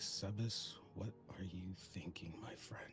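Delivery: muttering quietly, murmured under the breath. Narrating a character who gazes at the horizon, lost in thought, muttering quietly. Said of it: "he mutters to himself quietly".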